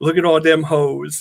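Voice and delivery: put-on sarcastic delivery. Retelling what they said when the images came up: imitating own sarcastic remark. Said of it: "me being the sarcastic one".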